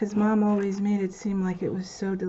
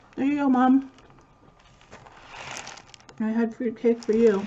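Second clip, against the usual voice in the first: talking while chewing, through a full mouth; 3 semitones higher than usual. Eating fruitcake and addressing mom, talking with food in mouth. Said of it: "Excuse me for talking with food in my mouth".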